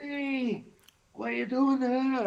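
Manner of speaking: very high, slow, put-on Scottish accent. Answering a request to try it: attempted scottish accent. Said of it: "I can't do Scottish".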